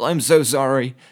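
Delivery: put-on high, little-kid voice. Retelling apologizing to two girls after water sprayed everywhere, imitating a childlike apology. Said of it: "I went like a fucking child".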